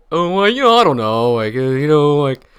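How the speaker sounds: high, loud, rambling dim-witted voice, fumbling the words. Imitating a coach's fumbling reply, sounding like Lennie from Of Mice and Men. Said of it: "why you make him sound like Lenny".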